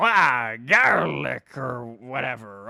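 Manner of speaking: belted, loud cartoon video game character voice. Showing how Wario sounds: Wario voice. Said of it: "Wario is like".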